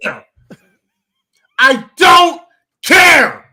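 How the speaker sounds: full-on heated yelling, loud and high-pitched. Telling Tim off, before you thank him and admit how you sound, yelling. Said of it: "I'm sitting here and I'm yelling".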